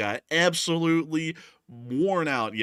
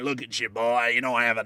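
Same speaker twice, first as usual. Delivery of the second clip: put-on construction worker voice. Speaker describing turning into a hard-hat worker drinking a Coors Light, construction worker voice. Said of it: "started talking more and more like this".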